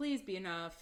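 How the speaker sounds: ordinary delivery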